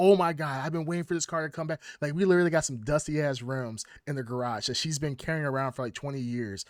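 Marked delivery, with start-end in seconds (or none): 0.0-1.8 put-on excited tone. Retelling someone hearing news of a returning car: imitating someone excited. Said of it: "She's all excited".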